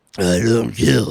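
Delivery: very low, dark hero voice. Playing around with others, do the Batman voice as Sylvester Stallone. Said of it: "doing Batman voice as Sylvester Stallone".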